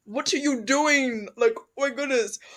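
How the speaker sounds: high, loud mock angry rant.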